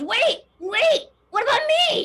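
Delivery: very high, loud, shrill goblin creature voice. Storyteller voices the goblin creature as the others walk out, goblin creature voice. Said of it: "the goblin creature goes".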